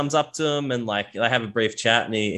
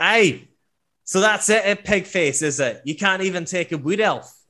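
put-on aggressive, higher, drunken, taunting dwarf voice; 8 semitones higher than usual. Voicing a drunk dwarf getting up in a player's face: voicing a drunk, aggressive dwarf. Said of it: "he kinda gets up in your face, and you smell the stench of ale on his breath".

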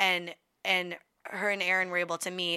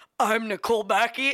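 mock stuffy-nosed voice; 3 semitones higher, 4 dB louder than usual. Recalling slating her name at a commercial audition, imitating her own stuffy voice.

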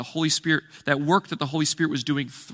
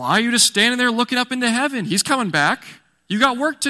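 put-on sarcastic tone, higher; 8 semitones higher, 4 dB louder than usual. Acting out angels speaking to followers on the hill: imitating sarcastic angels. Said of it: "kind of doing the same thing here".

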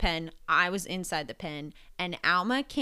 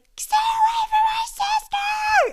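very high, drawn-out, bloody-murder scream; 8 dB louder than usual. Retelling how a sister screamed at an attacking goat: imitating someone screaming. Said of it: "Janessa was screaming bloody murder".

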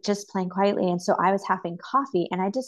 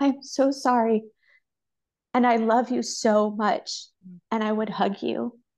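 emotional, much slower; 3 semitones higher than usual. Speaker recounts the words of comfort they would offer someone, emotional. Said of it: "it makes me emotional".

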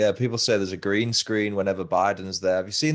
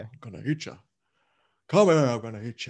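classic storybook lion character voice, stage style; 3 semitones higher than usual. Asked whether a lion could say it would eat you, answering in Cowardly Lion voice. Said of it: "You sound like the guy from The Wizard of Oz".

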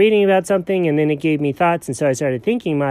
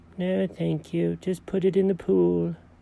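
sleep-talking, quieter; 8 dB quieter than usual. Asked if he's having an ice cream dream, the character keeps talking in his sleep. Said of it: "What kind of dream is this?".

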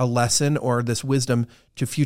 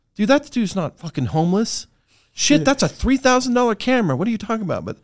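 put-on booming voice, much higher pitch; 10 semitones higher, 3 dB louder than usual. Telling a story about sitting on a bench in Malibu, doing Trevor's booming voice. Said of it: "I hear Trevor's booming voice like".

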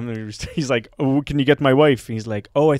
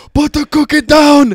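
mock-angry movie voice, much higher and louder; 13 semitones higher, 9 dB louder than usual. Retelling a kids-movie scene where Phil eats the cookie, imitating angry Arnold. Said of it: "Arnold's comedic voice is just him being angry".

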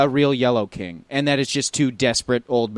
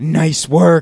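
loudest, exaggerated stage whisper; 5 semitones higher, 7 dB louder than usual. Retelling Jesse congratulating Zach during a dance, loud stage whisper. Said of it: "the loudest whisper".

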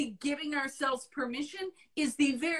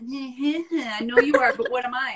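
put-on childish taunting tone. Showing the tone of a willful attitude: Pee-wee Herman voice. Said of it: "that Pee Wee Herman thing".

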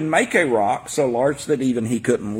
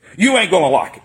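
put-on very harsh tone; 3 semitones higher, 4 dB louder than usual. Retelling what a very large man said to the speaker, imitating a very harsh tone. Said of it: "In a very harsh tone".

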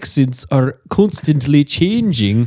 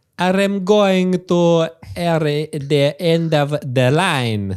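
fake, mock Italian accent. In an improvised train scene, a passenger says where he is going in a mock Italian accent. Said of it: "Are you Italian?".

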